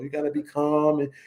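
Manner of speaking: usual speaking voice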